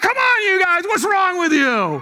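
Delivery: loud, high-pitched yelling.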